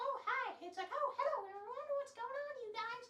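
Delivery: voice pushed very high in pitch. Showing how they can go from a higher to a lower pitch, using a high-pitched voice. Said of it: "A higher pitch to a lower pitch".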